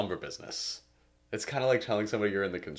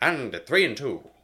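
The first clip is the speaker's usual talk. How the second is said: put-on old-time baseball announcer voice, higher pitch; 6 semitones higher, 8 dB louder than usual. Co-hosts brainstorming voices for an episode, old baseball announcer voice. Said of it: "like an old baseball announcer".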